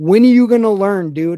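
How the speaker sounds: frustrated yell. Recalling watching a game, retelling yelling at the TV. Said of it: "I was yelling at the T V".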